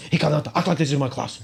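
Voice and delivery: put-on loud yell in a Russian accent. Describing a teacher throwing kids out of class, retelling his shouting in a Russian-sounding accent. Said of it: "he screams at kids in this Russian-sounding accent".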